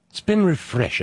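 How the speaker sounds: put-on British accent.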